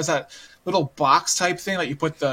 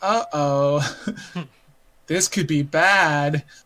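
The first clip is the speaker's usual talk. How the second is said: very slow, drawn-out character-style speech. Retelling a game scene where a girl microwaves a hamster: imitating a game character's slow speech. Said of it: "'Cause she talks really slow like that".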